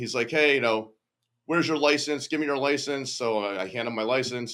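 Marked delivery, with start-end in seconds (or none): 0.3-3.1 loud, barking cop voice, pitched up. Retelling a police officer yelling at him in the snow: imitating a cop yelling. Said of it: "he starts yelling at me".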